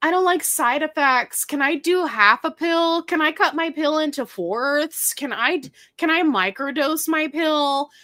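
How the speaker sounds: put-on high, snotty voice with Valley Girl accent. Describing pill users' questions, voicing them in a snotty Valley Girl voice. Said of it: "I just gave them like the snotty um Valley Girl voice".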